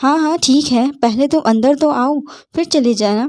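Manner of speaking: ordinary delivery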